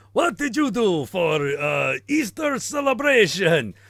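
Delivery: loud, fake put-on German accent. Improvising a scene and trying again, in a put-on German accent. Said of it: "come up with German accent".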